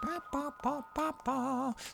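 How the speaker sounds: very high, soft mock whistling.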